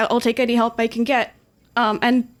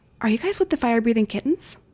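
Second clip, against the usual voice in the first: hushed stage whisper, half-whispering. As the waiter bringing food, he quietly asks the guests; half-whispering. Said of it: "quietly in whisper say".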